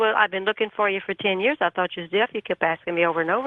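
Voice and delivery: plain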